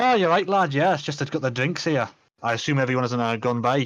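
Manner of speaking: terrible, clumsy, unconvincing put-on Scottish accent. Voicing the character who brings the drinks, in a bad Scottish accent. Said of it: "apologise for my terrible Scottish accent".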